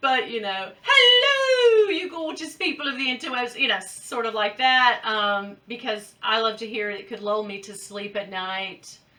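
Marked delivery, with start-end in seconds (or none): 0.8-3.6 weak put-on British accent, high, "hello" drawn out. Showing how messages are read as if a woman were saying them, lacking British accent. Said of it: "my British accent is very lacking".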